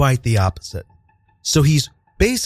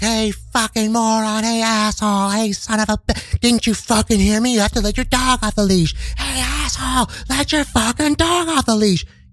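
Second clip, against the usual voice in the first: high, abusive, screaming rant; 8 semitones higher than usual. Retelling how a stranger followed behind, imitating him screaming insults. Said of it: "just screaming at us".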